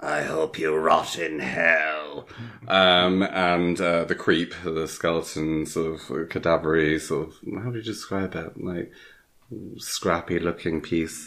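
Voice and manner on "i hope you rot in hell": slow, possessed-sounding demonic voice, "hell" drawn out. Describing the little boy in his room suddenly speaking; demonic voice. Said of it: "he's got a demonic voice all of a sudden".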